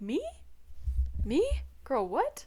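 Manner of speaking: acted flustered, high, swooping, taken-aback disbelief. Retelling a reply to a compliment: imitating being taken aback. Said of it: "taken aback".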